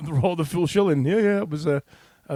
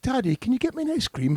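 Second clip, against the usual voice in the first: put-on very high, sugary sweet little-child voice; 8 semitones higher than usual. Quoting his six-year-old daughter asking her daddy, imitating daughter's sweet voice. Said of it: "Sweetness' voice".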